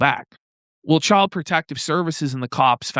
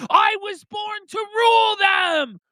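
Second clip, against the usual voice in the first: put-on screaming speaker voice, higher pitch. Retelling a recorded meeting where Richard Spencer screamed: imitating Richard Spencer screaming. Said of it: "where he's screaming".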